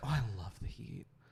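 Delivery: imitated, overly expressive gushing. Describing a woman's performative way of talking, the speaker mimics her: mimicking performative gushing. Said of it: "inflection of like she was very like it, expressive... performative".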